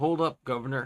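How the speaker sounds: put-on masculine voice. Reading a game character's line aloud: put-on masculine voice. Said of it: "a masculine voice?".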